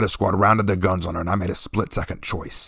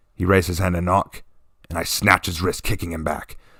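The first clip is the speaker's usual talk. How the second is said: ordinary delivery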